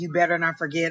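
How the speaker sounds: normal talking voice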